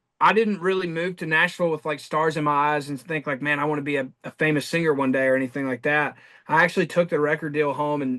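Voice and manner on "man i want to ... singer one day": plain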